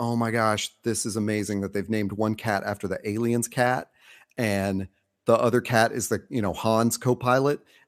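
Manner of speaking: ordinary talk, nothing marked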